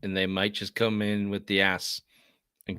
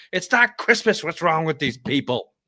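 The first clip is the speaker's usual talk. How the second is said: put-on high-pitched, loud toddler yell. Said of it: "she yells".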